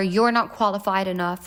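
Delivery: ordinary delivery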